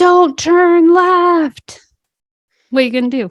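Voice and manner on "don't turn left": high, loud yell, word left drawn out. Retelling a driving instructor's warning to a learner driver: imitating an instructor yelling. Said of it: "your instructor yells".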